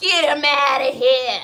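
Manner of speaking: very loud, high, put-on Italian mobster shout. Speaker acts out their own future reaction, in an old Italian mobster voice. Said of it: "I'm gonna sound like an old Italian mobster".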